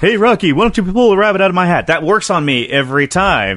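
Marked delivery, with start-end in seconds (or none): 0.0-1.9 rattled-off, fast, high character voice. Speaker chatting with another person breaks into a Bullwinkle voice. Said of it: "I love Bullwinkle's voice".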